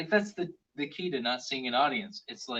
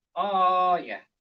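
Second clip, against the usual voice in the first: high, loud cartoon plumber voice called out; 5 semitones higher, 7 dB louder than usual. A speaker offers their best Luigi impersonation: Luigi impression. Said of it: "It's my best Luigi impersonation".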